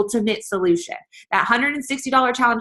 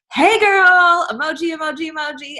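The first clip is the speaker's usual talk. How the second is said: enthusiastic, high-energy, bright, high and excited; 8 semitones higher, 3 dB louder than usual. Showing how to greet someone in a message: excited, high-energy greeting. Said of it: "That brings the energy".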